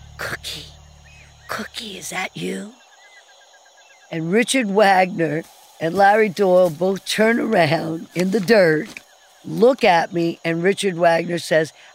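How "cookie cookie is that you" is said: urgent, very hushed, barely voiced whisper. Retelling a soldier calling out in the dirt after a mortar attack: imitating a whisper. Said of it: "some soldier whispering".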